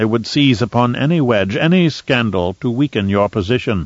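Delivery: ordinary delivery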